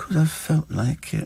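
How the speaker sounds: play-acted, small, soft, plaintive little voice. Imitating how he answers when asked why he drinks milk, little plaintive voice. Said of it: "he's got this little plaintive voice".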